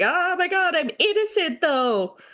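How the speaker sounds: mock, very high, dragged-out, drawn-out freak-out. Retelling a story character's reaction while summarizing a fic: imitating someone crashing out. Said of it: "so she's, like, crashing out".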